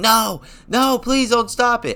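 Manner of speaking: screaming pitched very high. Retelling screaming at the camera during a fight: retelling own screaming. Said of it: "I was screaming at the camera saying".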